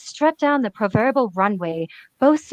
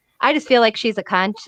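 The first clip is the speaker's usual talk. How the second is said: ordinary delivery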